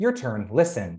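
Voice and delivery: ordinary talk, nothing marked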